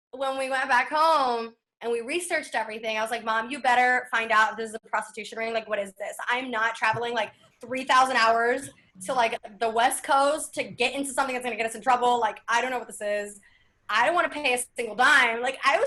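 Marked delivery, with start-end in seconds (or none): none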